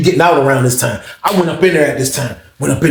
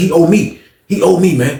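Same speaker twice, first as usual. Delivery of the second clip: ordinary talk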